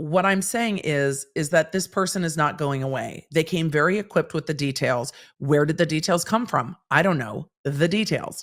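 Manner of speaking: usual speaking voice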